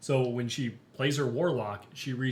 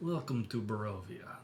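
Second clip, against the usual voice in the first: put-on spoken softly in a Russian accent; 2 semitones lower, 6 dB quieter than usual. A Dungeon Master recalling how he voiced Strahd for his players, in a Russian-like accent. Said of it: "very much like Russian".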